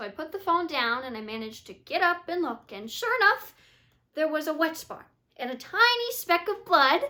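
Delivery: naive, innocent, artless, open-hearted delivery. April describes an experience from her past: naive. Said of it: "we see April naively describe an experience from her past".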